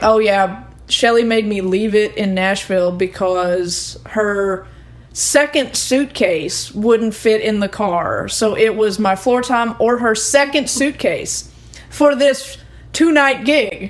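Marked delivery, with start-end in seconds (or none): none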